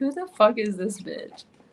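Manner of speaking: crude, rough gym-fighter voice. Imagining fighters at a gym reacting to a newcomer teaching: imitating fighters at the gym. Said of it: "They would be like".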